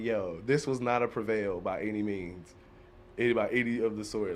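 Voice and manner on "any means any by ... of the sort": normal talking voice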